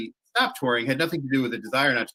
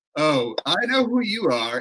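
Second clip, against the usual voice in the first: put-on slow, proper British accent; 3 semitones higher than usual. Retelling how a man at the desk greeted them, in a proper british accent. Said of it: "in a proper British accent".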